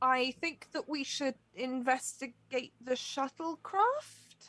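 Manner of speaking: very slow, confident delivery with rising upspeak ending. Voicing Mark proposing a plan to the crew: utmost confidence, ending as a question. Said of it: "the most confidence you've ever heard until it ends in a question".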